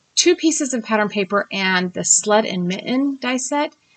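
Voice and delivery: plain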